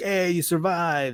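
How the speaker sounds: pirate crew character voice. Acting out pirates greeting a droid who survived: Hondo voice. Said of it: "I don't know why I'm doing Hondo's voice".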